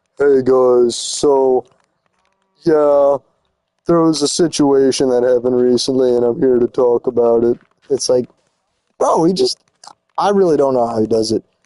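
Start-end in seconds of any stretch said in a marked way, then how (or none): 0.2-7.6 flat monotone drone, dead flat, no lift. Mocking a YouTuber who just sits in a room, monotone YouTuber impression.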